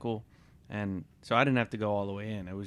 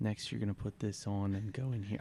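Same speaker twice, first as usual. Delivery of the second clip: imitated flat, low monotone, quieter; 4 dB quieter than usual. Retelling what the gentleman handling the service said, imitating his low monotone voice. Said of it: "had a really low toned monotone voice".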